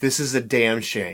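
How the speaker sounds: mock angry, acted-out voice. Retelling what a woman said to the whole group, acting out her anger. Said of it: "she's mad".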